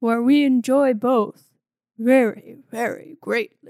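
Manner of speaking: low, slow voice.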